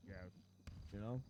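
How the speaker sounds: utterly level, low, flat, no rise or fall. Telling the others how Bison sounds when serious, imitating Bison's extra monotone. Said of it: "he goes extra monotone".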